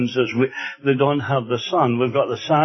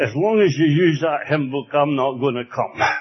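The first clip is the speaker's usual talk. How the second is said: put-on thick, broad Scottish accent. Retelling a lady's reply when he visited her, broad Scots accent. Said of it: "in a broad Scots accent".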